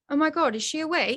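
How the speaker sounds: put-on British-accented exclamation. Retelling the cardiologist's words during the procedure: imitating a british accent. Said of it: "he has a British accent and he goes".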